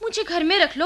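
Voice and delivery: ordinary talk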